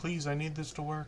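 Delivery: put-on, very soft, barely audible pleading. Apologizing to everybody for a mic problem, retelling pleading with it. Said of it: "I was like pleading with it".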